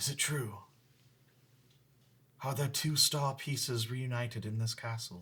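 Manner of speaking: faint, feeble, failing, very soft voice. A game master voices someone calling from a dungeon cell: very weak voice. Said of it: "a very weak voice from one of the cells".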